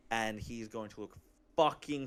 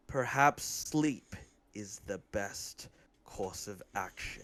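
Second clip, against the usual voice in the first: through gritted teeth, lower pitch; 4 semitones lower than usual. A player voices a character staring into a dragon's eyes, through gritted teeth. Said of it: "he says that through gritted teeth".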